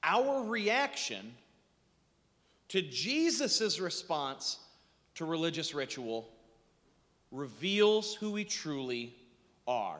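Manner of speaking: very slow, deliberate, broken, halting phrasing. Speaker repeating a complicated lesson to the audience, very slow. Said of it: "I'm going to say it again slowly".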